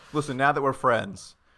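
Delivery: ordinary delivery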